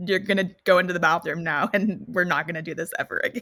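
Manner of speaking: mock stern, firm, no-nonsense voice. Retelling what they told a man who was misbehaving: retelling a don't-mess-with-me voice. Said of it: "used my "Don't mess with me" voice".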